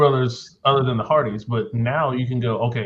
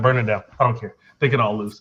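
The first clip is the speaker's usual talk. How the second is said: usual speaking voice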